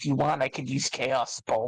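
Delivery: in a whisper. A player, in character, comes up to him and offers a spell, whispering. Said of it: "come up to him and whisper".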